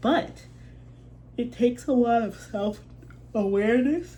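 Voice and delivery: yawning while talking. Speaker talking to listeners, apologizing for repeated yawns, yawning. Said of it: "I keep yawning".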